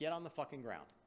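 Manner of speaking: usual speaking voice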